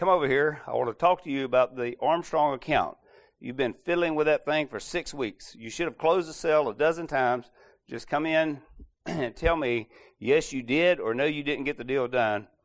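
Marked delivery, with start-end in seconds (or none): none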